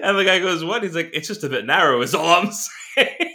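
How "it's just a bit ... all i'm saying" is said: mock very matter-of-fact, plain, no fuss. Retelling what Brendan Gleeson said to three people walking his way, matter-of-fact tone. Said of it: "they said it like it was like very matter of fact".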